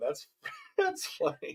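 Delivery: half-whispered, breathy, laughing through words. Reacting to another speaker's joke, laughing while talking. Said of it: "I'm trying to stop laughing".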